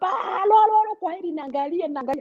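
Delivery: very high, sing-song, mocking voice.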